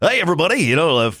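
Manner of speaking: high, loud, fast hyped radio DJ patter.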